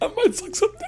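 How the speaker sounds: very high, squeaky mock fan voice. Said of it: "He's like".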